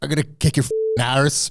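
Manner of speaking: badly done put-on Irish accent. Mimicking an actor's line from a film, in a bad American-Irish accent. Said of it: "him doing a bad American Irish accent".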